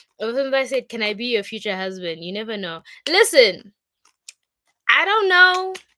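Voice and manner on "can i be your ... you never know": ordinary talk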